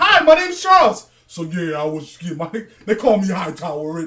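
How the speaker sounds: put-on deep voice. Retelling talking to the same girl at the mall, imitating a much deeper voice.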